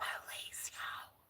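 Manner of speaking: hushed, soft whisper. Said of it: "I gotta be quiet".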